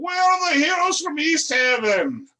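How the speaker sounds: rowdy, boisterous dwarf voice, loud, very high hollering. A character walks in and calls out, in a boisterous dwarf voice. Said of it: "he's boisterous about it".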